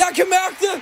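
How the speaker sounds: thrilled, high-pitched excited cry.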